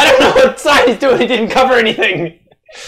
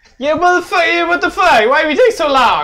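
fake Italian accent, higher; 6 semitones higher than usual. Complaining that the game takes so long: put-on Italian accent. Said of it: "What's with the Italian?".

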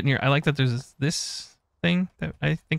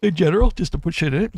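talking through a yawn; 2 semitones higher than usual. Asking chat about storing things in an item, yawning while talking. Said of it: "Sorry, I'm yawning".

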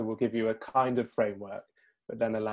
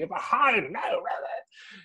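very high, slow shriek; 10 semitones higher, 4 dB louder than usual. Imitating a conductor rehearsing an orchestra: imitating a conductor screaming. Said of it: "he's screaming at the orchestra".

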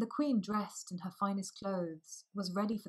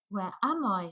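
loud, startled cry of surprise; 6 dB louder than usual. Narrator reads a girl waking up in her coffin: crying out in surprise. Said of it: "she cried in surprise".

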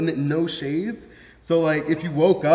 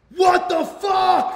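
put-on yell with a higher pitch; 14 semitones higher, 3 dB louder than usual. Retelling how an assistant yelled from the other room: imitating Alec yelling. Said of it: "I just hear him yelling in the other room".

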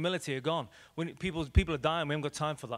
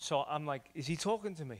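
plain

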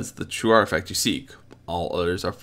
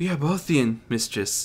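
meek, humble voice, pitched up; 5 semitones higher than usual. A figure dressed as a servant answers their mistress, speaking meekly. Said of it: "offered meekly".

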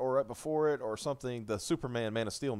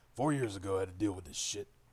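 big, low, put-on giant-monster voice; 4 semitones lower than usual. Telling a story about monsters coming back, Godzilla voice. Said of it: "do my Godzilla voice here".

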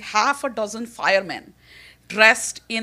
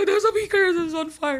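put-on very thick Indian accent, fast, pitched up; 8 semitones higher than usual. Retelling own call to the lab emergency phone: very thick indian accent. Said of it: "in a very thick Indian accent".

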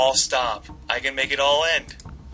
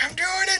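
very high, taunting, teasing game-AI voice. Playing a strategy game, voicing the AI opponent: voicing Churchill AI. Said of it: "He's like".

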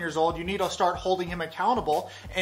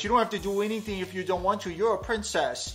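full-on put-on babyish baby-talk voice. Retelling what Brandon went on to say, imitating Brandon's baby voice. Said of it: "goes on to say in a baby voice".

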